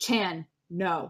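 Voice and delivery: loud, clipped voice. Describing what they say in the moment, loud succinct go-go voice. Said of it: "in my most succinct and loud go-go voice just say".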